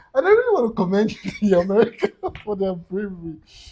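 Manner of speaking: words spoken through laughter. Speaker who apologizes for laughing during a serious situation, laughing while talking. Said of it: "I'm sorry I'm laughing".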